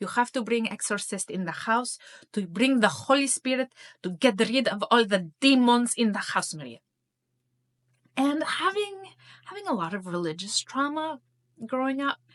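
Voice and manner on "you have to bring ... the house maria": bad put-on Greek accent, louder. Speaker retells her mother's words, in a bad imitation of Greek accent. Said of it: "my very bad imitation of my mother's Greek accent".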